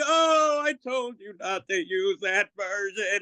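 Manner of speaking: slow, weeping, tragic, crying lament. Describing a film dream sequence where the old man sits crying: imitating the old man crying. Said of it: "he's sitting there just crying".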